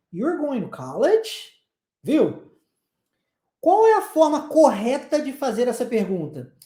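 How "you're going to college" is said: pitch rises on the word college. Portuguese lesson on English question intonation: question rise on college. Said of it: "Olha a entonação de pergunta".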